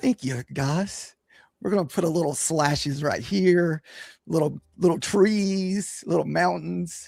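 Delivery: smooth, eased out, trees stretched. Joking that another speaker sounds like Bob Ross: smooth silky Bob Ross voice. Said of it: "that nice, smooth, silky voice?".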